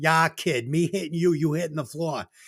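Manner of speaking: imitated Boston accent. Quoting a line from the movie: imitating a boston accent. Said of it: "That was a good Boston accent".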